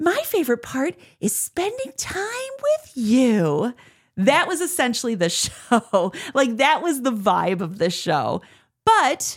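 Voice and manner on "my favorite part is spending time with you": sugary, cheesy fairy-tale princess voice, very high, stretched out. Retelling a bit done with their girlfriend, speaker does a cheesy Christmas princess impression. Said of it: "like cheesy Christmas princess impression".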